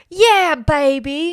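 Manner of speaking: put-on belted out, with "baby" stretched long. Trying out a line as an Austin Powers impression. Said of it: "I wish I could do a good Austin Powers impression".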